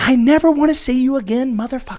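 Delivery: play-acted, angry shouted outburst, pitched high. Acting out a wife or girlfriend yelling at you: imitating someone yelling. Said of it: "is yelling at you".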